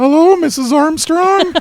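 put-on very high, teen-sounding voice. Recapping an episode's opening, the speaker does the teenage voice heard. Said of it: "kind of a teenage voice go".

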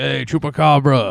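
mock drunk taunting. Telling a story, the speaker acts out what a drunk man called a dealer, imitating a drunk taunt. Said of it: "when he's all drunk".

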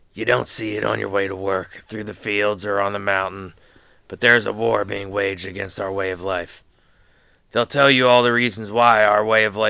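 raspy voice in a stump-speech orator style. Reading a governor's nomination speech aloud, in a raspy Kevin Costner voice. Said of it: "in my raspy Kevin Costner voice".

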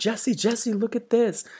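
very high, loud calling-out shout. Retelling how the student ran from the bus: imitating the student shouting. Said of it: "and he's shouting".

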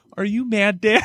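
put-on sad little child voice. Retelling a son's worried question during a football game: imitating a sad little son. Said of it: "with the saddest little face and goes".

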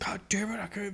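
mock yell, high-pitched. Retelling a scene where a character curses in disgust: imitating someone yelling. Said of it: "He's just yelling".

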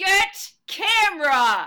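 very high, very loud bear-like growling yell. Retelling giving birth and telling him to get the camera, reenacting a bear-like growling yell. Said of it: "I think of my voice in this moment as like a bear".

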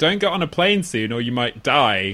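ordinary talk

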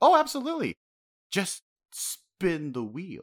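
very high, drawn-out, swooping sing-song fake supportiveness. Retelling a request to leave, imitating Big Mom, falsely supportive. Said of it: "seemingly was very supportive at first".

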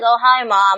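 flat, slow delivery. Speaker critiquing a scene where Lisa greets her mom, flat Lisa impression. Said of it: "just kind of like".

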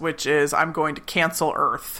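ordinary talk

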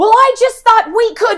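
high, loud stage voice, stopping dead mid-sentence.

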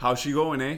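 put-on Canadian-style accent on the phrase. Welcoming someone back from Canada, a speaker teases in a Canadian accent. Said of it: "what's a Canadian accent?".

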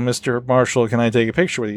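ordinary talk

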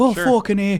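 boisterous, loud, rowdy put-on Irish accent. Retelling being drunk in a car and deciding to be Irish: put-on Irish accent. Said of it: "We decided to be Irish".

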